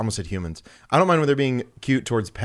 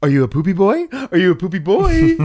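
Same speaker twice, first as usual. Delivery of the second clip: put-on loud, high-pitched, goofy, silly baby-talk voice; 8 semitones higher, 7 dB louder than usual. Showing how people talk to their dogs, in a stupid voice. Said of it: "give your dogs like a stupid voice".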